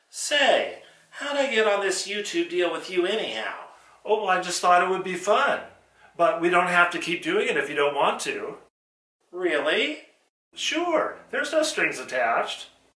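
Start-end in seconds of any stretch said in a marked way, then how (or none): 0.2-3.6 smart-aleck, wisecracking ventriloquist dummy character voice. In a ventriloquist sketch, the dummy questions Jerry; ventriloquist dummy voice. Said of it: "More fun with my [name] dummy".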